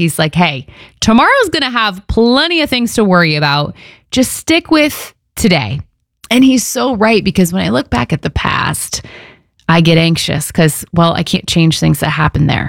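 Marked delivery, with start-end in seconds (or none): 0.4-5.8 high, sarcastic tone. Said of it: "I hear Jesus saying it kind of sarcastically".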